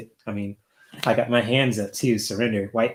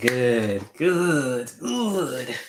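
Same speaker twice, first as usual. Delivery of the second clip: bad, very slow villain voice, "good" drawn out; 3 semitones higher than usual. Telling a listener to keep laughing: Emperor from Star Wars voice. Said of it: "I sound like the, uh, the Emperor from Star Wars".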